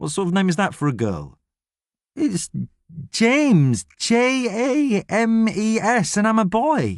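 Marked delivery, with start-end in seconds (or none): 2.1-7.0 small squeak, spelled out very slowly. A child corrects an adult who took his name for a girl's, in a squeaky little voice. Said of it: "It was your squeaky little voice".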